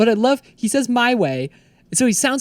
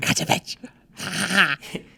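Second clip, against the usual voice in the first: whispered, breathy little gremlin voice; 5 dB quieter than usual. Redoing a mocking line after being asked about it: gremlin voice. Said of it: "was that some sort of gremlin voice you were doing?".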